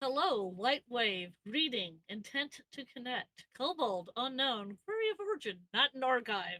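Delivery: flat reading like a machine or computer. Reading a message from a computer aloud, as asked: reading like a computer. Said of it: "I want you to read it like the c-".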